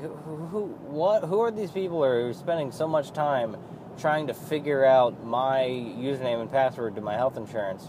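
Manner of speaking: usual speaking voice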